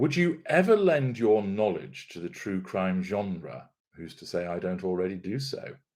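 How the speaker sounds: plain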